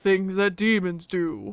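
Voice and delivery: short, terse, clipped, low-effort delivery. Answering the other speaker's question about demons, in a Logan impression. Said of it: "you do a good Logan".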